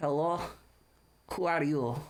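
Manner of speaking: deep, low, gruff and rough character voice. Narrator voices a man answering a knock at the door, in a deep, gruff voice. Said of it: "It's a very deep, gruff voice".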